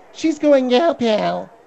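put-on witch voice. Mimicking how she says a phrase, in a Wicked Witch of the East voice. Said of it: "you sound like the Wicked Witch of the East".

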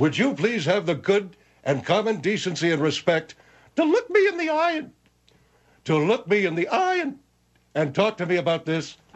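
high-pitched, squeaky cartoon animal voice. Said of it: "you sound like a cartoon animal".

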